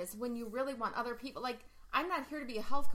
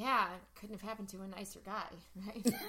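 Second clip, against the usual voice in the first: put-on, low, very hushed, smug and arrogant; 3 semitones lower, 5 dB quieter than usual. Retelling how a customer who tips well says it, imitating a smug smirk. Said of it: "And he says it like this".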